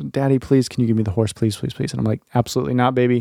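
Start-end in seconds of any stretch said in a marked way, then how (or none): 0.0-1.9 mock pleading, acted-out begging tone. A father retells how his daughter begged him for a toy horse, imitating her begging. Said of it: "she's just begging me for this horse".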